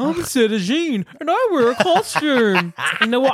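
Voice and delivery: very high, squeaky felt-puppet voice. Discussing a drag queen's costume look, speaker voices her in the Muppets voice. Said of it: "I'm doing the Muppets voice".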